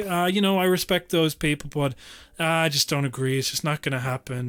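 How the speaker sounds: condescending, dismissive voice.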